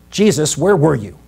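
put-on slight scolding tone. Retelling how the disciples questioned jesus: imitating a slight scolding. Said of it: "Scolding him just slightly".

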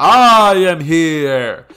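slow, high, booming heroic shout.

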